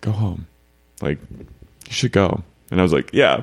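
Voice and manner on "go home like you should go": hushed, very quiet, slow, under the breath. Quoting a close friend who told the speaker to go home, very quietly. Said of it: "very quietly".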